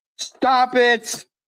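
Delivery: shouting. Telling another speaker to stop, yelling. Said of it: "Why are you yelling at me?".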